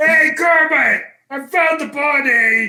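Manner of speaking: high, yelled puppet-monster voice from the throat. Hosts trading Muppet impressions, one calls out to Kermit in a yelling Sweetums impression. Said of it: "He's always yelling".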